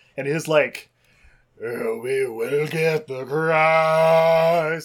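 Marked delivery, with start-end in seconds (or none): 1.7-4.9 loud, very slow intoning, "Christ" drawn way out. Describing the rabbi character in a movie, imitating his super deep voice. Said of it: "the super deep voice or whatever".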